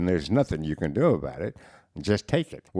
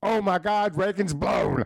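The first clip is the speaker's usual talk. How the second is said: mock shrill, loud, high-pitched holler; 14 semitones higher than usual. Retelling a buddy's prank shout in the press box: imitating a loud yell. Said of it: "he yelled out real loud".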